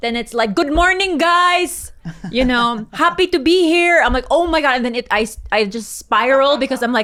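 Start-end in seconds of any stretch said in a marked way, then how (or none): 0.5-4.0 put-on strong Filipino accent, slow and high. Recalling greeting everyone while doing this for the first time, strong filipino accent. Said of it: "the Filipino accent just comes out so strong".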